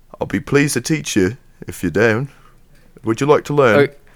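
put-on British accent, inviting, wizard-like. Asked whether to use his British accent, the speaker plays a wizard: put-on British accent. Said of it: "I could do one".

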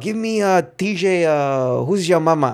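put-on heavy Mexican accent. Retelling what a man would say when picking his favorite receiver, in a heavy Mexican accent. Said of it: "Heavy Mexican accent, you know, Spanish accent".

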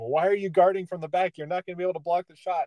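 play-acted, high-pitched yelling. Retelling own past yelling at the TV: retelling yelling at the TV. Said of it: "I'm sitting there yelling at the T V going".

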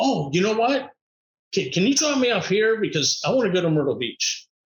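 plain

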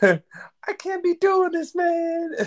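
very high-pitched, no bass, slow and drawn out. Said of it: "that high-pitched voice".

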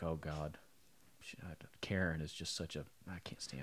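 put-on under-the-breath muttering. Acting out how women complain about each other, imitating women muttering. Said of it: "are just under their breath".

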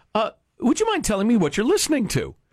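put-on charming British accent. Retelling what a passenger on a flight asked: charming British accent. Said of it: "in a charming British accent".

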